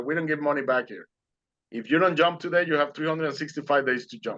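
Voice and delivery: ordinary talk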